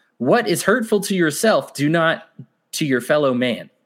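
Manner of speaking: plain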